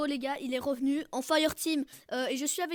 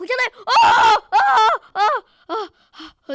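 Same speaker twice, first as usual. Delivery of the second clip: yelling, higher and louder; 8 semitones higher, 15 dB louder than usual. Reacting to something happening in the game, shouting. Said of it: "Désolé d'avoir crié".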